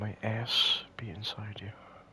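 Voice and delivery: whispered. Playing a game on stream, repeating a line to a fellow player, whispering. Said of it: "Why are you whispering it?".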